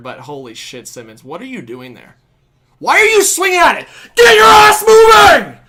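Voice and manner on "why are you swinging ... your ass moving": high, very loud, swooping, fired-up shouting. Reacting to a Leafs game play by Simmons, fired-up yelling. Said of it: "Sorry, I got to get fired up".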